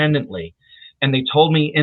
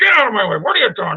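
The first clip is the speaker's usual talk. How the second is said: put-on gruff, crotchety, pitched-up old man grumble; 8 semitones higher than usual. Retelling an old man cursing in the dark at a show: imitating Jules Lanier's gruff voice. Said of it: "this gruff voice full of profanity".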